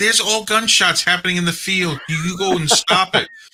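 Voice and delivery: high, indignant, complaining delivery.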